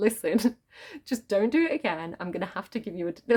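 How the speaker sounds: mock-laughing through the words. Speaker retells a teacher scolding the students while laughing along, imitating him laughing mid-speech. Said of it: "he was like laughing along with us".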